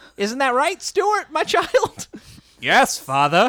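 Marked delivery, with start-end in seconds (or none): 2.6-3.5 put-on British accent. In a parody bit, the son answering his father: british accent. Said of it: "I'm British".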